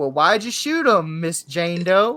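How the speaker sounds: heavy, sweet, really deep Southern drawl. Retelling what a call taker asked a caller, in a deep Southern accent. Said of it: "really deep Southern accent".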